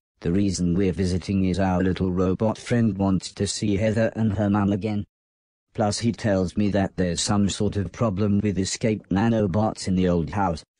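ordinary delivery, nothing marked

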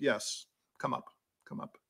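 acted, gracious, regal queenly whisper. Retelling how Dorothy answered when asked to join her on the bench, imitating Dorothy's gracious reply. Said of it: "graciously said".

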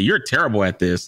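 ordinary delivery

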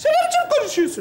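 high voice with swooping pitch.

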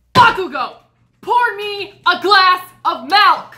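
shrill, very high, drawn-out shout. Demanding a glass of milk from a school friend, yelling. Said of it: "Why are you yelling at me?".

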